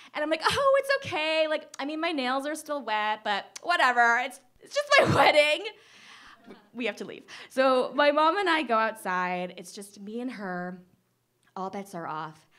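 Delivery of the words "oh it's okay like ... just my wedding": high, raised, forced breezy cheer through tears. Retelling telling the others it's okay: imitating tearful forced smile. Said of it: "smiling with, like, tears streaming down my face".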